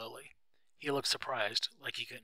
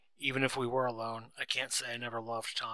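ordinary delivery

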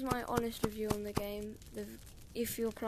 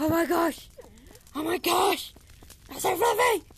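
all-out, very loud, high shout; 8 semitones higher, 12 dB louder than usual. Reviewing a game on stream, the speaker reacts to a fluffy dog, shouting. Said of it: "Sorry for shouting".

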